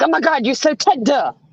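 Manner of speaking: acted, mock-frustrated tone. Speaker retells how the man she dated got frustrated with her: imitating a frustrated partner. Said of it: "he'd get all frustrated with me".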